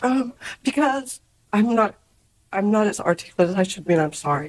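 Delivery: tearful, halting, crying speech.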